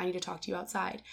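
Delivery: very quiet, hushed, rushed murmur, hard to catch. Telling a story of waiting to order, quoting a guy who talked so quietly. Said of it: "he talks so quietly".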